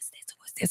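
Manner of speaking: very quiet, hushed, breathy whisper. Retelling how the boys reacted when her mother grabbed one; retelling the boys whispering. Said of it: "You can hear them all whispering".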